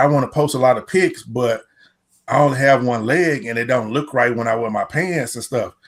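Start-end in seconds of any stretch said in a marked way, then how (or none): none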